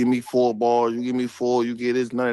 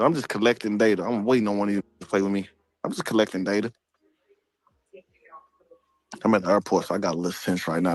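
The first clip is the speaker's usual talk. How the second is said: calm, cool, collected, unbothered, quick delivery; 3 semitones lower than usual. Speaking from the airport while waiting for someone to play, calm, cool, collected. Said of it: "This is my calm, cool, collective".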